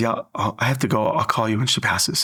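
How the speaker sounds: ordinary delivery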